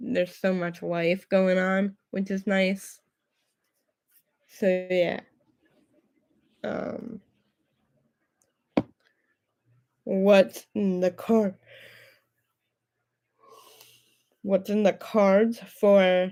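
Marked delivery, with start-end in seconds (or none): 6.6-16.3 talking through a yawn, slower. Speaker at the end of a long day, yawning while talking. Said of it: "sorry, I'm yawning".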